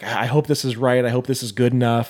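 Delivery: put-on nervous voice. Retelling someone bringing a bottle of wine: imitating someone nervous. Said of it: "she's so nervous about this wine".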